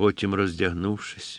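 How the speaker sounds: plain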